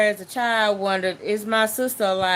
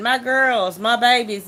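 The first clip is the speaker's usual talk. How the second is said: mild, held-back, frantic calling out in distress; 3 semitones higher than usual. Retelling how the parents screamed during the bull chase: imitating parents screaming. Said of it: "my dad and my mom was screaming".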